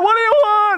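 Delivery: high scream of stark terror. Retelling how a man rolled down the window at renewed knocking: retelling a terrified scream. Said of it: "he screams out in utter stark terror".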